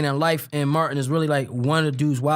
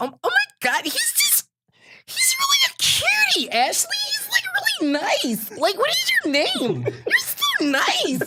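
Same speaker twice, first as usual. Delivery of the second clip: put-on very high, girly, swooping voice.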